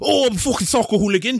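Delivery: mock Welsh accent. Speaker jokes around in conversation, putting on a Welsh accent. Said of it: "That's a spot on Welsh accent you got there".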